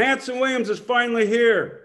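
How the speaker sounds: high, carrying, acted-out receptionist-style yell. Retelling how the receptionist called out his arrival, retelling a yell. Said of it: "and she yells out".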